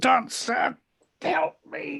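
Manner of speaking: high, close whisper right at the ear. Voicing a character grappling someone, whispering in their ear: whispering in character. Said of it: "whispers in your ear".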